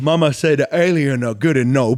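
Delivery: talking mid-yawn through the line. Naming a pick, the speaker yawns through the line. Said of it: "without yawning through it".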